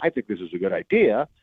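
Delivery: "idea" ending with an upswing, wide tune.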